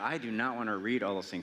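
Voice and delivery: ordinary talk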